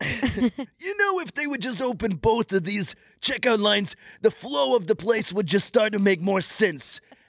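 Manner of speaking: very high, squeaky storytelling character voice. Retelling what a man said about the checkout lines, imitating the man's voice. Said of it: "when you do that voice".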